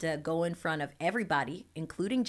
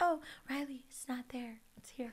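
high voice, putting someone right; 7 semitones higher, 8 dB quieter than usual. Retelling how the choreographer gave corrections, Janet impersonation. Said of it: "that's my Janet impersonation".

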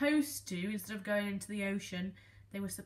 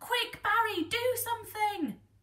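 very high, loud, urgent cry; 13 semitones higher, 6 dB louder than usual. Reading a story, the fish urge Barry to act as a box falls: crying out urgently. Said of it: "Cried the fish".

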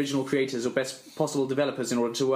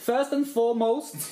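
very high-pitched attempted Swedish accent; 10 semitones higher than usual. Asked how Swedish people speak, giving Swedish a go: attempted Swedish accent. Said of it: "I'll give Swedish a go".

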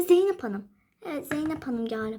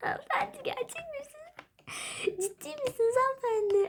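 very high voice fighting back giggles; 9 semitones higher than usual. Addressing a woman who came to ask for advice, barely holding in laughter. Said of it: "Kendimi zor tutuyorum şu an".

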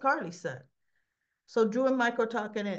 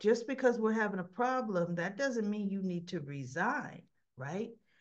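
ordinary talk

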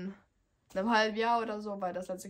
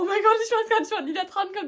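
mock very high, very loud, shrill, rattled-off hyperventilating panic; 12 semitones higher, 9 dB louder than usual. Recalling sitting alone waiting for someone's turn, retelling hyperventilating panic. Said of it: "voll am Hyperventilieren".

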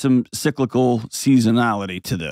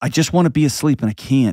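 mock child voice, exasperated, deeply frustrated. Retelling a daughter's words after waking at night, imitating frustration. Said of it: "I heard in her voice this deep frustration".

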